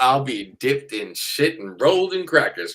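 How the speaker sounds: terrible put-on Kentucky accent. Quoting a saying of Kentucky friends: terrible Kentucky accent. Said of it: "a probably terrible accent and stereotype".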